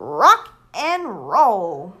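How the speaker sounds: loud, belted, swooping call with roll stretched out. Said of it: "I can do a good fifty in, from Numberblocks impression".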